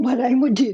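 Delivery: choking while speaking. Telling listeners about a method for hard days, choking. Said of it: "sorry, choking here".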